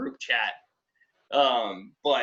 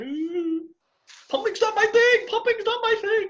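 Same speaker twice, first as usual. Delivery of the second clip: very high, mock-whiny, squeaky put-on voice. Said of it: "I'm like".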